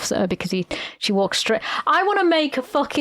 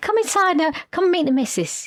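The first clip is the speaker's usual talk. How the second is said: put-on Cockney accent, much higher pitch; 7 semitones higher than usual. Answering a question about London speech by quoting a man, in a Cockney accent. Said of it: "He's got a Cockney accent".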